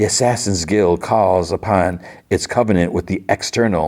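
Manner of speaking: usual speaking voice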